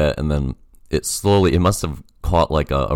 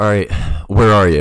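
put-on breathless panting voice, much higher; 3 semitones higher, 4 dB louder than usual. Retelling a man's phone call looking for him at the 7-eleven, imitating him out of breath. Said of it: "And he's out of breath".

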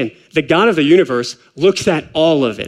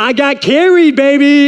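mock proud, thrilled, high, drawn-out bragging; 9 semitones higher, 5 dB louder than usual. Retelling a player's proud words after winning: imitating excited Melvin Gordon. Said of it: "And he's so excited".

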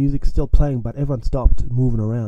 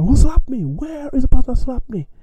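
mock furious, very high-pitched, shrill angry shouting; 13 semitones higher than usual. Retelling how a slapped man kept searching for the slapper, imitating an angry yell. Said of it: "Kept yelling".

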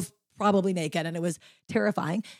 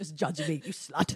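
put-on British cartoon voice, lower pitch; 5 semitones lower, 10 dB quieter than usual. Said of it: "with like a British voice being like".

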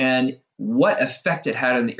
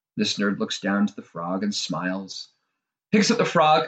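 ordinary delivery

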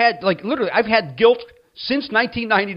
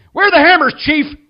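rude shout, loud and high-pitched; 8 semitones higher, 7 dB louder than usual. Retelling how an old man came into a hardware store and yelled. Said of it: "this old man comes in and yells".

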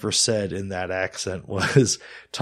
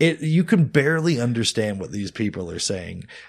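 plain

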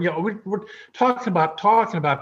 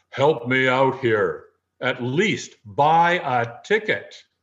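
mock deep, godlike voice booming from above; 4 semitones lower than usual. Telling a joke about a man praying to win the lottery: booming voice from the sky. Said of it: "a booming voice comes out of the sky".

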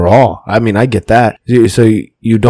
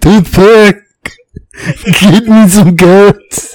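very high-pitched put-on Austrian accent; 10 semitones higher, 3 dB louder than usual. Acting out Gunther demanding food at a buffet, in an Arnold Schwarzenegger voice. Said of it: "He sounds like Arnold Schwarzenegger now".

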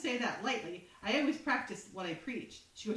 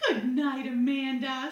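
sugary, syrupy, over-sweet tone in a raised voice; 3 semitones higher, 7 dB louder than usual. Retelling a scene from the show, imitating syrupy sweet tone. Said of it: "She's all so syrupy sweet".

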